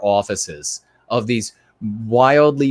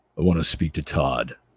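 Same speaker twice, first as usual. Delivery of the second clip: faked deep voice, dropped low; 6 semitones lower, 4 dB quieter than usual. Imagining calling in and being patched through, in a put-on deep voice. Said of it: "you do a deep voice".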